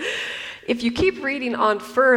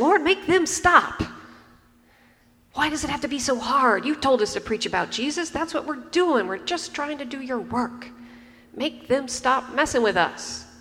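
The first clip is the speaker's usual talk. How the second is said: frustrated, angry, complaining, griping, pleading tone; 3 semitones higher than usual. Speaker acts out how they might pray if angry, mock-angry complaining prayer. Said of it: "if I was feeling angry right then".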